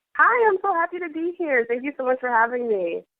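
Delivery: happy and openly delighted. A guest just welcomed onto the show greets the host; happy, smiling voice. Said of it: "it sounded like you had an extremely big smile".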